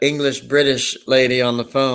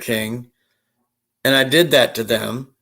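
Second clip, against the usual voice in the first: normal talking voice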